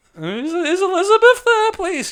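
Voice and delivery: put-on very high, slow, squeaky teenager voice. Recalling calling someone's home before mobiles, squeaky teen voice. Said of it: "in your squeaky teen voice".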